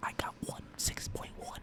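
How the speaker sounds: put-on creepy whisper. Retelling a creepy moment by imitating Biden whispering.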